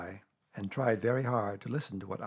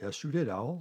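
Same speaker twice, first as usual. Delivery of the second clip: ordinary delivery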